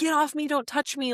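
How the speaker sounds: mock hysterical, high, frantic voice. Retelling fighting off someone holding her back: retelling her hysterical protest. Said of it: "fighting them".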